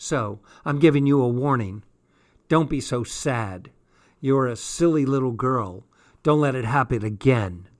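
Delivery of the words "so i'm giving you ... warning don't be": plain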